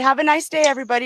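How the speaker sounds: sweet, mild, gentle, nice tone. Retelling what someone said at the end: imitating a nice soft tone. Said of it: "in a nice, soft tone voice".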